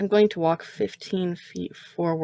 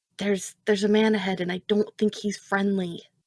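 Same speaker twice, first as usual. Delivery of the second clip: whispered, in a put-on character voice; 2 semitones higher than usual. Warning another character in a whisper that a man ahead seems unfriendly: whispering in character. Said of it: "I'm going to whisper to Thema".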